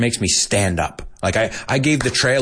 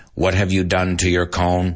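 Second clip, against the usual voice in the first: robotic, mechanical robot-like voice; 4 semitones lower than usual. Repeating a dad's line to his daughter Connie, in a robotic voice. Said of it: "they have like this robotic voice".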